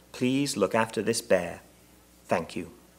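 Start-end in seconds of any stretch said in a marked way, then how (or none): none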